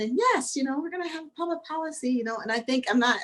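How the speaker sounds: high, fast, gushing, excited fake voice.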